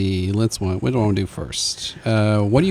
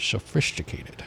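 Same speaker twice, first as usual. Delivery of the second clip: breathy movie-star voice, put on; 10 dB quieter than usual. Delivering a joke's punchline in Sean Connery voice. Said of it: "I'm going to do this in my Sean Connery voice".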